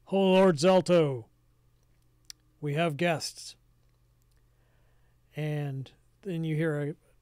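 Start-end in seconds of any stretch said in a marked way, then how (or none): 0.1-3.5 loud, grand, declaiming giant voice. Game master voicing someone announcing guests to their lord, proclaiming in a giant voice. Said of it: "proclaim in giant".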